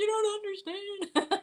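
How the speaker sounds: high, slow tearful wail. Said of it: "I'm like".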